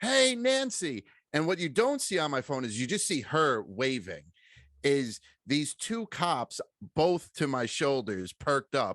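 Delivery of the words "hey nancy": mock, very high, sudden, shrill screamed-out voice. Retelling how they called out to a woman with their phone ready, retelling a scream. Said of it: "I just screamed out".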